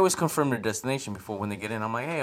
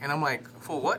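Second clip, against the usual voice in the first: usual speaking voice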